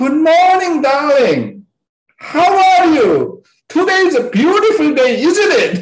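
cheery, sunny voice. Advising how to greet your spouse and children, speaker demonstrates: happy greeting. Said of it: "You need to say it like that".

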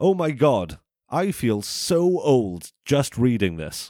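plain

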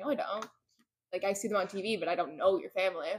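ordinary talk, nothing marked

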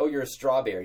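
ordinary talk

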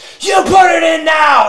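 very high, slow, drawn-out raging shouting. Retelling how he went at a guy who refused to do it, imitating Tony Robbins going crazy. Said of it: "he'd go crazy on the guy".

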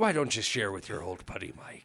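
woeful, sorry-for-himself, mournful pirate captain voice. Begging a friend to share, in a sad pirate captain voice. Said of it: "You sound like a sad pirate captain".

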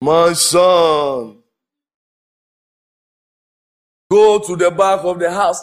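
deep, divine-sounding voice with drawn-out "son". Speaker mimicking how some people imagine God talks, in a deep voice. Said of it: "God is a deep voice guy".

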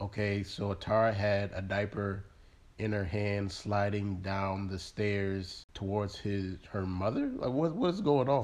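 ordinary talk, nothing marked

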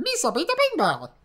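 high, clumsy, goofy creature voice. Showing Camden how the impression should go, in Jar Jar Binks voice. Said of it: "he goes like".

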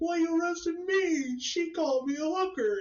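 mock, very high, shrill, loud wailing sob. Retelling a story of a girl arrested after punching someone: imitating her crying. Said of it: "she starts crying".

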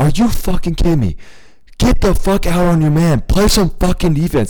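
high, top-of-the-lungs screaming. Telling about a man on a basketball court, retelling a screamed rant. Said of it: "literally screaming at the top of his lungs".

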